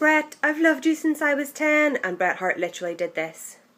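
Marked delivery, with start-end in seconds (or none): 0.0-2.0 high, loud, shrieked, adoring scream. Acting out screaming a celebrity's name through the bars: retelling a scream. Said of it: "you're me screaming".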